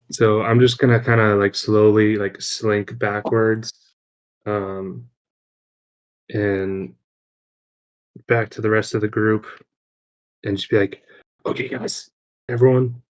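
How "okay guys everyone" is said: stage-whispering. Player's character slinks back to the group to warn them, stage whisper. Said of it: "just stage whispering".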